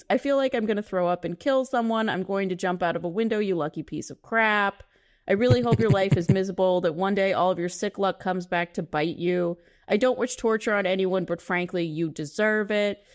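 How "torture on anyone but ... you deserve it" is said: ordinary talk, nothing marked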